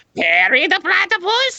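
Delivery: very high cartoon voice with wild pitch swoops. Showing how the voice slips: Doctor Doofenshmirtz voice. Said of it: "suddenly it turns into Doctor Doofenshmirtz".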